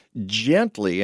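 leaning hard on the word "gently". Speaker advising how to clear heavy snow from trees, stressing the word gently. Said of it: "and I emphasize the word gently".

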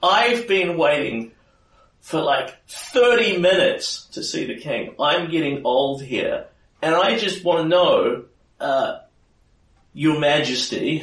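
shrill and loud. Narrating a scene, voicing Jennifer Hanvaki as she comes in to see the king. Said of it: "Jennifer Hanvaki's shrill, annoying voice".

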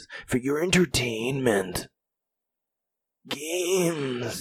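soft, slow superhero voice, games stretched out. Podcast host addressing listeners, in a Batman voice. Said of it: "That's my Batman voice".

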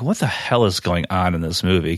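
usual speaking voice

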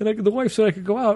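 put-on high, wheezy old man voice. Telling a story, imitating Gabe after he shows up: wheezy old-man voice. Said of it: "this is how Gabe talks".

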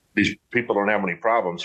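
ordinary talk

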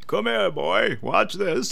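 put-on rough, crackly, creaky, high old grandpa voice. Retelling how his grandpa turned something on to show him, imitating his grandpa's voice. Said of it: "That's like, what he sounded like".

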